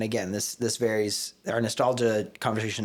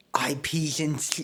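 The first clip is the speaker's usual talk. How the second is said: put-on lisping voice, higher pitched; 6 semitones higher than usual. Attempting a quote as an impression: Taika Waititi impression with a lisp. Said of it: "I gotta try and do a Taika Waititi impression".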